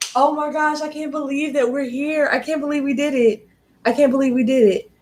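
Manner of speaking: overwhelmed voice on the verge of crying. Speaker talking to everyone at a big moment, on the verge of tears. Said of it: "But I want to cry".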